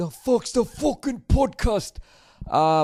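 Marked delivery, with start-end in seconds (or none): 0.0-2.0 bad Scottish accent, high and slow. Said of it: "sorry for the bad accent".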